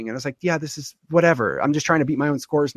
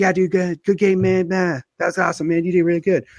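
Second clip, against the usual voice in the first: kid voice like a cartoon; 3 semitones higher than usual. Retelling what the winning player said after the game: Cartman voice. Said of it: "he sounded like Cartman".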